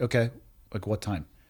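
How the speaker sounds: imitated flat, emotionless, unemotional tone. Retelling own reply on hearing of a death: imitating own flat emotionless tone. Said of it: "At that tone of voice, not physically capable of an emotional range".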